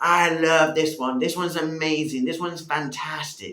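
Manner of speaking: very loud, high yelling. The speaker voices God rejoicing over us: yelling out loudly. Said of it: "He's yelling out loudly".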